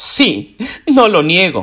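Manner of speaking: slow, haughty, unbothered, arrogant delivery. Reading a story aloud, voicing a ghost answering a reproach, arrogant. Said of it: "contestó con arrogancia el fantasma".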